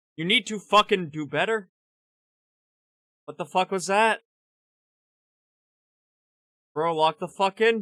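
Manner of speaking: put-on gentle, dead-calm scolding tone. Retelling how a soft-spoken man scolded mistakes, imitating a very calm scolding. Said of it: "in the calmest tone ever".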